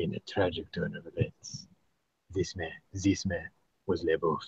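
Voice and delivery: low, dropped narrator voice. Joking about a French prison tale told as narration: Jean Reno narration voice. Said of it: "this narration by Jean Reno".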